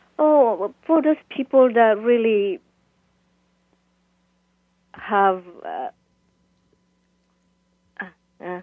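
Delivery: choked up, voice breaking, struggling for composure. A guest in an interview answering who their book is for, choked up. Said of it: "while you get composed again".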